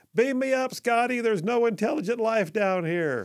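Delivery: mock, high, parade-ground shouted yell. Speaker retelling a recruit made by a drill sergeant to shout a line: retelling a yell. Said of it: "snap to attention and yell".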